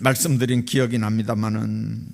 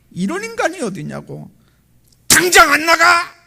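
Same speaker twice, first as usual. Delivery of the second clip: high, loud, furious yell. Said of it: "막 고함을 지릅니다".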